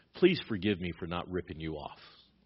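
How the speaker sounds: mock sarcastic tone. Acting out what Paul says to the church: retelling a sarcastic remark. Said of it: "I love Paul's sarcasm".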